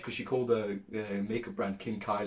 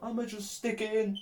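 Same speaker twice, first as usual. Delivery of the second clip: acted scream, higher; 12 semitones higher than usual. Retelling what he yelled while blacked out: imitating own past screaming. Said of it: "I was screaming something along the lines of".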